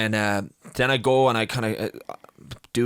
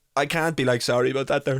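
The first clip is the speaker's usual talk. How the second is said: plain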